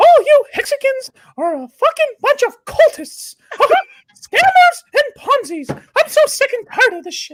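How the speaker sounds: loud squeaky voice with swooping pitch. Speaking to the Hexicans, doing a Mickey Mouse voice. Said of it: "only do Mickey Mouse".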